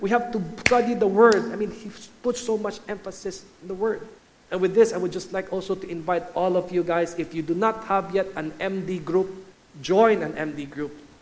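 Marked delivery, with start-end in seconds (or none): 0.0-1.5 loud, insistent, repetitive broken-record preaching. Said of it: "he'll always say".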